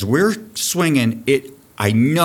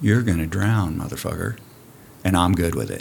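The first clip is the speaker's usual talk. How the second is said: mock dead calm, low, even, unbothered delivery; 4 semitones lower, 3 dB quieter than usual. Speaker recalls warning someone who would not put his hat on; imitating his past calm tone. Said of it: "with all the calmness I could possibly have".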